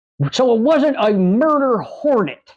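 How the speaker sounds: exaggerated dopey Southern drawl. Retelling a senator questioning the FBI official in charge: John Kennedy impression with stupid Southern accent. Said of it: "has a stupid Southern accent".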